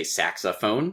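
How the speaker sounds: saxophone: sax and phone stressed, middle syllable light. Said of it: "stress, unstress, stress".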